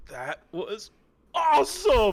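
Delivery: put-on high, loud, squealing little-kid voice. Voicing a character's excited reaction: little Kid Incredibles voice. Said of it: "in his best little Kid Incredibles voice".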